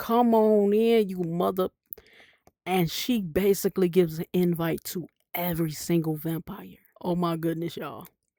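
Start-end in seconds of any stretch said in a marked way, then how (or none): 0.0-1.7 mock screaming in fury, upset and taunting. Retelling a movie scene where a character invites vampires in: retelling a scream. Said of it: "She screams".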